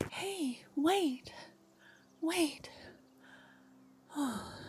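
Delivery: out of breath, gasping and panting, hushed voice. Narrating a story: someone runs up behind the listener at the monastery gates, out of breath. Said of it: "let me catch my breath".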